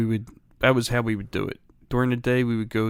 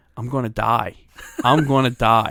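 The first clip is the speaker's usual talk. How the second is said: put-on panicked cry, louder; 6 dB louder than usual. Retelling panicking as a child on the toilet: imitating own past panic. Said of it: "I start panicking".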